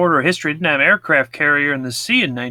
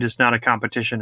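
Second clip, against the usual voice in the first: ordinary delivery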